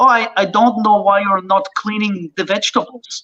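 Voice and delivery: put-on Israeli-accented speech. Retelling what a woman said while cooking on the boat: Israeli accent. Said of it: "my Israeli accent's really perfect".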